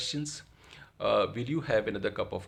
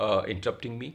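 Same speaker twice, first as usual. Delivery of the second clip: usual speaking voice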